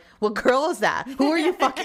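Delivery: high, shrill, swooping, rapid teasing tone. Retelling teasing a partner after a work phone call, jokingly mock-accusing. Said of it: "I'll just like jokingly say".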